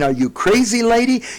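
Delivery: high, loud scream. Retelling how a man ran out the door: imitating someone screaming. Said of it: "ran out the door screaming".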